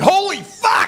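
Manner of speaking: high-pitched, loud yelp. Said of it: "I jumped back and I said".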